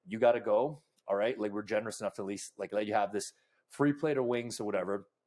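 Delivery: plain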